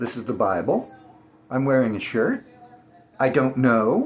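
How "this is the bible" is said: rising uptalk lift on the end of Bible. Trying ways of talking, making statements questions: rising question intonation on Bible. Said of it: "Should I make everything into a question?".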